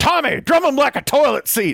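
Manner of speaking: very high, very loud Texan hollering and cheering. Describing a texan who shouts encouragement from the side: imitating loud texan man. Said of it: "a very loud American Texan type character".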